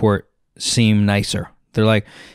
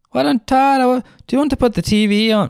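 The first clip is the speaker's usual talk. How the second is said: very high, vaguely Irish, put-on accent; 13 semitones higher than usual. Retelling a woman offering to put the TV on as he tries to sleep, maybe-Irish accent. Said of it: "Maybe she's Irish".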